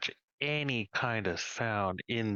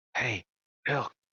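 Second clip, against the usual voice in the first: loud stage whisper; 3 semitones higher, 3 dB louder than usual. During a role-play scene, calling to a companion, in a stage whisper. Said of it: "stage whisper".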